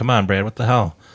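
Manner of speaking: ordinary delivery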